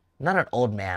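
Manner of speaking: ordinary talk, nothing marked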